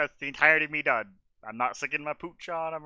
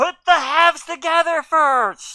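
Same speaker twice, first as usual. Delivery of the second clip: high, slow, loud yell. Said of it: "I will yell".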